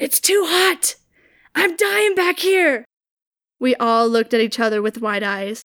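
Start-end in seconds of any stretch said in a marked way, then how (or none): 0.0-2.9 loud, high, slow whispered yell. Retelling what someone gasped from the back at a security checkpoint, whisper-yell. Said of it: "saying in a whisper yell".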